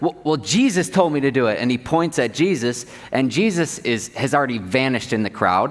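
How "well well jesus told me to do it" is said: play-acted, panicky, stumbling, freaked-out blurting. Retelling the healed man answering the Pharisees, imitating someone freaking out. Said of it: "he starts freaking out".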